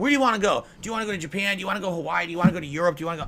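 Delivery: put-on irritated, angry, badgering voice. Mimicking the people who keep asking the speaker questions, in a mock-angry detractor voice. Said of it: "given the angry detractor voice".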